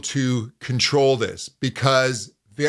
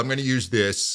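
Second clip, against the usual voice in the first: normal talking voice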